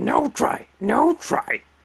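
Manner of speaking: very slow, drawn-out, high, creaky voice. Asked to change voice, doing Yoda from Star Wars: Yoda voice. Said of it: "I think Yoda, Yoda from Star Wars".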